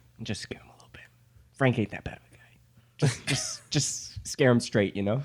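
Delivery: whispered voice. Retelling how the speaker whispered captain's orders to J Rock; retold whisper. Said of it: "I whispered to J Rock".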